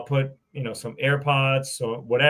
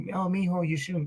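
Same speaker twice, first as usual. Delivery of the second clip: soft, high, put-on motherly voice; 5 semitones higher, 7 dB quieter than usual.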